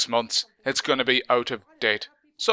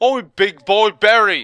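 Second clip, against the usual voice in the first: very slow, loud, dim-sounding put-on Cockney accent; 7 semitones higher, 7 dB louder than usual. Acting out a guy being thrown out, in a stupid put-on Cockney accent. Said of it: "I'm just doing a stupid Cockney accent".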